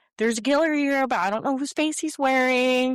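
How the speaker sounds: high, loud, alarmed sudden realization.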